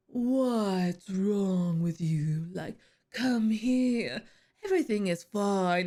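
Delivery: deep terrifying voice. Speaker imitates a male figure's terrifying voice: deep terrifying voice imitation. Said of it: "that deep".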